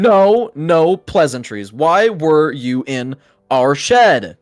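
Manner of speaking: seething with anger. The shed's owners confront the intruders who were inside it: fuming. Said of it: "they're both fuming".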